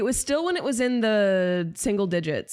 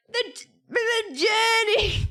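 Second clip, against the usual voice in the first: very high, high-pitched crone's yelling; 13 semitones higher than usual. Describing an old woman yelling after someone, the speaker imitates her yelling. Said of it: "she's like yelling after someone".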